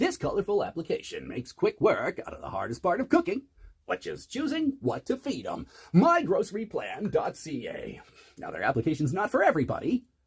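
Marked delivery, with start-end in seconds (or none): 0.0-8.0 slick radio announcer ad-read delivery. Speaker making fun of the radio guy by reading an ad, mock radio announcer voice. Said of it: "making fun of the radio guy".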